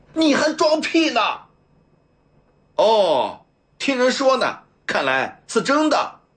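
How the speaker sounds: loud booming roaring bellow, pitched very high. A man breaks off his wailing and answers another man, roaring loudly. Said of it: "大声吼道".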